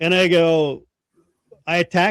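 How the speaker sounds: ordinary delivery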